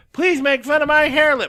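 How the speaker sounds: put-on play-acted, high, shrill, loud drunken pleading. Retelling a woman in the crowd at a joke set, imitating a drunk woman. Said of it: "just hammered".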